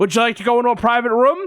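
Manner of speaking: threatening, menacing voice. Retelling an airport security officer's question: imitating a threatening officer. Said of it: "threatening me".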